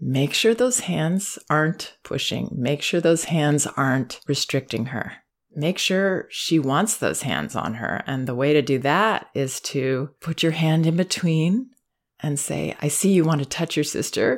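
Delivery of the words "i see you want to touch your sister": approving, affirming, encouraging and supportive tone. Showing a parent what to say to a child: encouraging tone. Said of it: "you're saying that in an encouraging tone".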